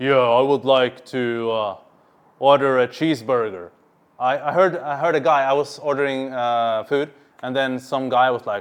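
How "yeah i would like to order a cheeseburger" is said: fake, forced dominant voice, pitched lower. Demonstrating how someone sounds when trying to seem dominant: fake dominant voice. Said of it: "trying to have a dominant voice".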